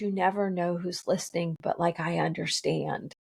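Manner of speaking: confiding under the breath. Retelling a conversation about a flu shot, imitating her lowered voice. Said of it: "And then she lowered her voice".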